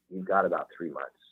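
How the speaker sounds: ordinary talk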